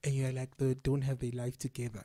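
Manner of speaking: ordinary talk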